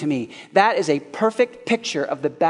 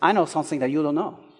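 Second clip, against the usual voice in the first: put-on Spanish accent. Retelling a duel scene, quoting Inigo Montoya in his Spanish accent. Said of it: "in his Spanish accent".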